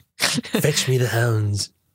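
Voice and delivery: put-on acted old villain voice. Doing an impression after being told of the resemblance: Mister Burns voice. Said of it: "I gotta do my Mister Burns".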